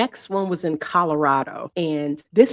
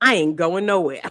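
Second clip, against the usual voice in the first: put-on switch from soft-spoken to hostile defiance. Retelling how the tenant turned on them: imitating a defiant refusal. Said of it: "from that soft-spoken tone to".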